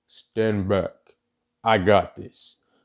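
low, deep voice from behind a mask. Narrating a video scene, one of the pursuers speaks in a deep masked voice. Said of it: "with a deep masked voice".

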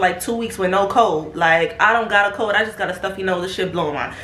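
usual speaking voice

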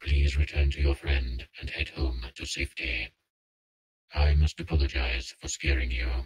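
unnatural, very low, guttural monster growl. A narrator voices the monster speaking in Patrick's head, in an unnatural guttural growl. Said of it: "it says in an unnatural, guttural growl".

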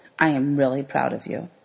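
dropped voice. Narrator reading a teacher leaning toward a student, in a dropped voice. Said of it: "drops his voice".

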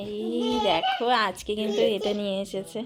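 laughing while speaking.

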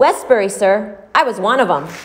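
sudden pride. A blind peddler adds a remark to the man who paid him, with sudden pride. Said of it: "then he added with an instant sort of pride".

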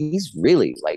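ordinary talk

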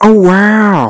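high, stretched wow. Trying a voice they have barely practiced: terrible Owen Wilson impression. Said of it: "Here's a terrible Owen Wilson".

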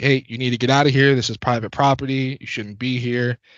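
stern, loud yell. Retelling yelling at someone by a feeder to leave: retelling own yell. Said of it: "I was yelling".

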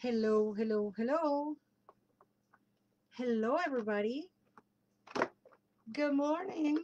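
rusty, unused-sounding voice. Opening the show to everybody, voice rusty from not speaking in a while. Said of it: "can you tell I haven't spoken in a while?".

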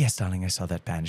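put-on soft English accent. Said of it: "this really soft English accent".

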